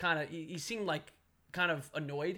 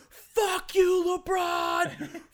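put-on loud, high drunken yelling; 13 semitones higher, 9 dB louder than usual. Retelling a drunk Warriors fan yelling at LeBron: imitating drunk Michael Rappaport. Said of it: "He was drunk".

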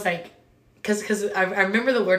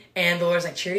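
usual speaking voice

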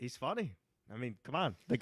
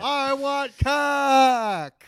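put-on drunk yell, higher and louder; 10 semitones higher, 11 dB louder than usual. Retelling how Kevin yelled out the van window: imitating Kevin yelling drunk. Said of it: "rolled the window down and yelled".

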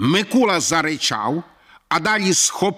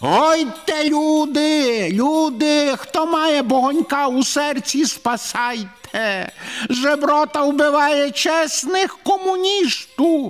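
very high, shrill screeching cry, люди drawn out; 10 semitones higher than usual. Sitting on top of the old woman and hitting her, the speaker is screeching. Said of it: "верещала мікроба".

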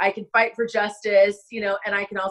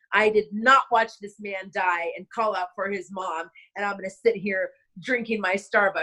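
ordinary talk

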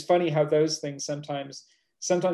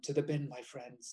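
put-on profound way of speaking; 11 dB quieter than usual. Quoting a friend's sleep talk from a record: imitating a profound way of speaking. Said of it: "he speaks in this really profound way".

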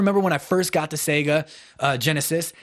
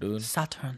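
feminine, console-startup-style announcer voice; 4 semitones lower, 10 dB quieter than usual. Recalling the Japanese Sega Saturn load-up screen: feminine voice imitating Sega Saturn startup. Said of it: "why you said it in such a feminine voice".

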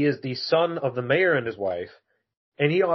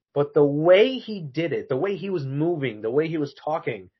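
usual speaking voice

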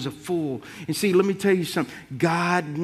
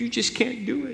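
mock crying voice, high-pitched, pleading through tears; 5 semitones higher, 4 dB quieter than usual. Retelling what a woman said while she began to cry: imitating someone crying. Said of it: "she began to cry".

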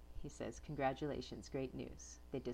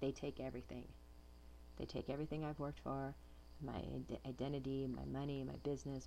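normal talking voice

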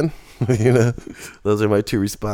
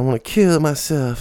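high, bouncy hip-hop style voice; 5 semitones higher than usual. Retelling what a bleeding man said before he was strapped down: imitating a hip-hop style voice. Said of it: "This kind of hippy hoppity kind of voice".

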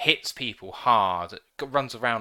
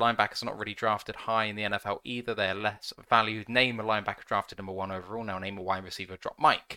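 ordinary talk, nothing marked

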